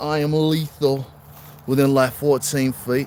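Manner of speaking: very loud put-on Australian accent, boastful tone. Joking about the feet thing, the speaker switches into an australian accent. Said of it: "in an Australian accent".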